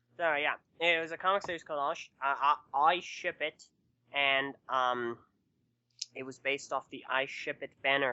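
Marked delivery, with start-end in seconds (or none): 2.7-3.6 brief, sudden, pitched-up Australian accent. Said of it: "why did you say that with an Australian accent".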